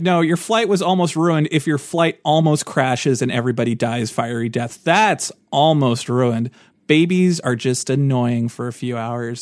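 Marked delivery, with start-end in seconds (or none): none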